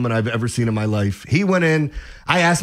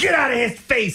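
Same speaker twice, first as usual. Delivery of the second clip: acted, very high-pitched screaming, scolding tone; 10 semitones higher than usual. Retelling a woman confronting a man who kicked the speaker's chair, imitating a woman screaming. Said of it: "and starts screaming at him".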